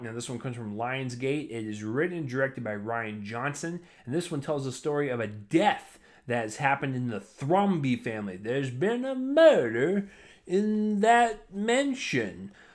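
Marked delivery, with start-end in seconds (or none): 8.4-12.5 terrible put-on Southern drawl, very slow, swooping. Reviewing a murder mystery film, doing a terrible Daniel Craig Southern accent impression. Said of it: "my terrible impression of what Daniel Craig did as his Southern".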